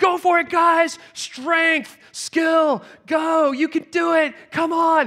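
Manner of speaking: very high, loud, drawn-out shouted cheering. Recounting a dream where a man stands up cheering others on, retelling shouted encouragement. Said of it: "he's just shouting his encouragements".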